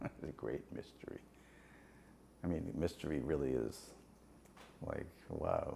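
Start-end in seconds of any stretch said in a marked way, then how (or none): 0.0-1.2 solemn, grave, breathy, hushed whisper, weighty. Recalling a saying of Prabhupada that sticks in your head, in the grave voice of Prabhupada. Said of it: "In the grave voice of Prabhupada".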